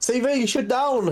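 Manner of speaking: shout in character voice. Playing a character in a dice game, calling to an ally: in-character shout. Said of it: "I'm gonna shout".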